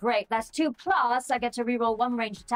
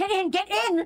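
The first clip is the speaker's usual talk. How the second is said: high-pitched yelling as panic rises; 9 semitones higher than usual. A player's character yells back to rio, panic rising in her voice. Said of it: "you can hear the panic rising in her voice".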